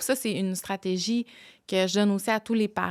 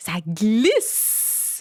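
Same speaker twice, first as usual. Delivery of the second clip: long, heavy, drawn-out stress on glisse; 4 dB louder than usual. Acting out slipping on the ice: stretched, stressed glisse. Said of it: "j'ai juste glisse que j'ai allongé, puis que j'ai, j'ai highlight".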